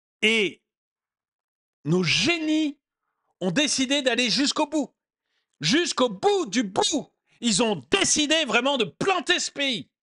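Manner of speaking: irritated, heated exasperation. Addressing his audience about the country's leaders: getting a bit worked up. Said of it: "je m'énerve un peu".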